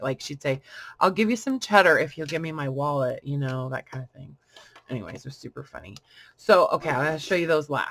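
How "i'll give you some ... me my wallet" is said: grave, dead-serious, utterly earnest, matter-of-fact. Retelling something a grandma used to say: imitating grandma, very serious. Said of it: "in the most serious way".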